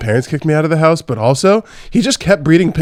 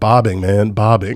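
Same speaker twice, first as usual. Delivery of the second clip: low, put-on American accent on the word bobbing; 6 semitones lower than usual. Retelling what he said back to her: imitating an American accent. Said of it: "He like did the American accent".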